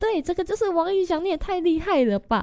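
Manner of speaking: very high, sudden shriek, an octave up. Retelling answering his question about a photo card, retelling a high-pitched scream. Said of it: "我瞬间就高八度尖叫说".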